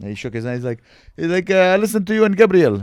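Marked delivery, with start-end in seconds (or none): 1.5-2.8 put-on Greek accent, higher and louder. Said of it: "what is he, this accent?".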